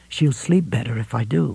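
ordinary delivery

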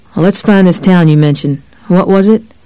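ordinary delivery

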